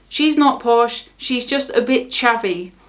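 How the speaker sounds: ordinary delivery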